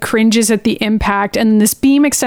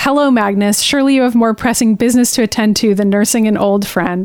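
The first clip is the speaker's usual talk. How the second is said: ordinary talk, nothing marked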